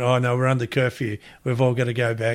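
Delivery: ordinary talk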